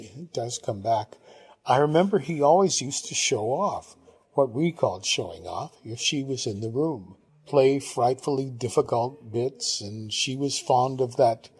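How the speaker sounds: ordinary delivery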